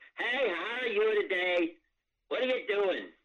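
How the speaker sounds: shrill, very high, all-out full-volume call. [name] mimics the loud leader of the food bank group, imitating Mary at full volume. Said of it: "willing to say anything that came to her head at full volume. She'd talk like this".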